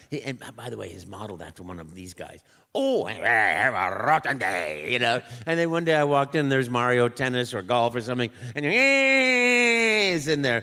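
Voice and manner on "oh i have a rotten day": low, very slow, drawn-out swooping voice. Showing the voice put to the Wario model: Wario voice. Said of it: "Put a voice to this guy".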